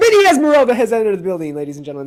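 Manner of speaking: very loud outburst with swooping, rising pitch. Announcing that someone has just entered the building: loud. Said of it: "I got loud there for a second".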